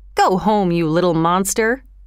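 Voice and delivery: plain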